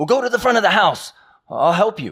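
shrill, very loud, high-pitched full-force yelling. Retelling telling a stranger to go to the front: imitating own yelling. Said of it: "so I'm yelling".

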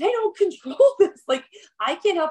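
high, angry shouting. Retelling an argument in a hallway about gown quality, imitating yelling back. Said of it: "And I was like yelling back".

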